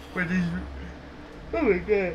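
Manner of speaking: words spoken through a yawn. Describing sights from a trip, the speaker talks through a yawn. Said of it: "Excuse my yawning again".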